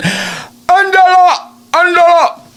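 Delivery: put-on very high-pitched calling out in a Mexican accent. Retelling how a woman's mother called her name, mexican mom calling tone. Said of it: "her mom would call her in the Mexican tone".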